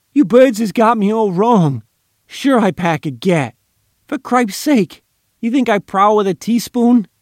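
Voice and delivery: high, loud, whiny pleading protest. A tied-up man whines to the men who hold him. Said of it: "he whined".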